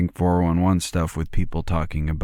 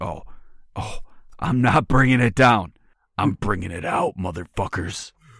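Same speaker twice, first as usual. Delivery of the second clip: angry monster creature voice; 3 semitones higher than usual. Acting out an angry Bigfoot-like creature that turns on people: angry creature voice. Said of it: "And he's like".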